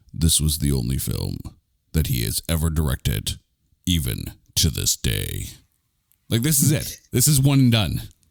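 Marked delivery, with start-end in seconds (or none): 0.2-5.5 put-on very low, ominous, menacing voice. Noting the only film a director ever made, in a menacing voice. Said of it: "I have to say this in my in my menacing voice".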